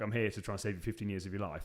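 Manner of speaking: ordinary talk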